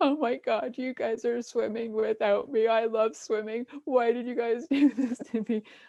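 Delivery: mock crying, high bawling little girl's wail. A mother retelling her five-year-old daughter's reaction, imitating a daughter bawling. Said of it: "my daughter started bawling her eyes out".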